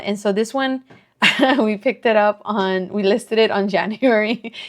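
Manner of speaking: speech broken up by laughing between the words. Listing an item's dates while laughing at someone nearby: laughing while talking. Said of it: "I'm laughing because he's right next to me".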